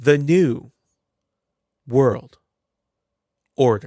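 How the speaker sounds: slow, each word set apart by a pause. Recounting how a man in a video said it: pause between every word. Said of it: "Like literally a pause between everything".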